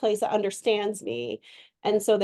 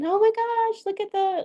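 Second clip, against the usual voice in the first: put-on very high baby talk; 12 semitones higher than usual. Explaining ways to talk to customers, the speaker demonstrates: baby talk. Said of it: "that's more baby talk".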